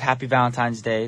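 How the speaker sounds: normal talking voice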